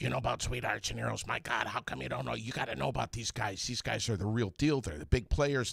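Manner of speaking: high voice, rattled off fast. Speaker quoting what his wife told him, imitating his wife. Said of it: "That's quite a wife impression".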